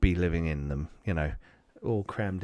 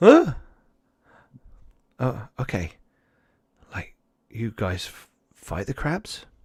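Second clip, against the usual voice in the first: put-on high-pitched young little girl voice; 5 semitones higher than usual. In a role-play, a child character questions an Atlantean, young girl voice. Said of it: "a young girl's voice".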